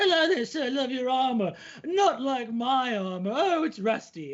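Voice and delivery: goofy, high, silly little goblin creature voice. Giving an example of a goblin serving a drink to a player, goblin voice. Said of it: "a goblin comes up and is serving you a drink and goes".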